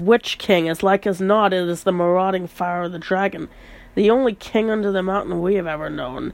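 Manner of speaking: ordinary delivery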